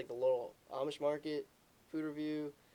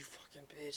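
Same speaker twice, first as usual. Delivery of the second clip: put-on furious whispered outburst; 10 dB quieter than usual. Retelling a dad's reaction to horseradish in his drink: imitating someone angry. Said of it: "he's mad as shit".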